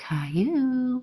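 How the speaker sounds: high cartoon voice. Retelling calling out between train seats to a little kid: Caillou voice. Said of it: "I do the voice".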